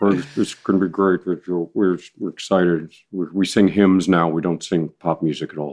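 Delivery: low, mumbled, halting talking voice. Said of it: "the impression of [name]".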